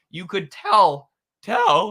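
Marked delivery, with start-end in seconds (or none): 1.5-2.0 loud voice cracking very high. Speaker criticizing a show's co-host mid-sentence, voice cracking. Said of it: "sorry, voice crack".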